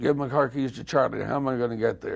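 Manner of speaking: ordinary talk, nothing marked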